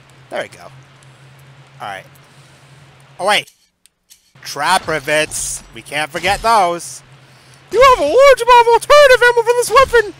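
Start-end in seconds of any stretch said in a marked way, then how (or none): 7.8-10.1 very high, shrill, very loud announcer voice. Reading out a game message about ammo in a put-on voice. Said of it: "I don't know why I use that voice".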